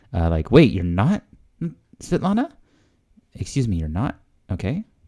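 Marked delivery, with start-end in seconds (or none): 0.5-4.1 put-on confused tone, higher pitch. Explaining a Russian dialogue, mimicking the woman's reply: imitating a confused question. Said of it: "you can hear the intonation like she's confused".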